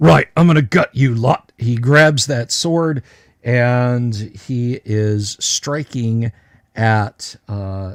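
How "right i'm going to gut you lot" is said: loud, rushed ogre character voice. Game master speaks as the ogre to the party, voicing the ogre. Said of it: "the ogre says".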